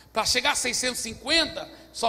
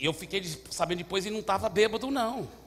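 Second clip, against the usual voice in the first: ordinary talk, nothing marked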